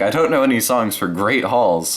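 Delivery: ordinary talk, nothing marked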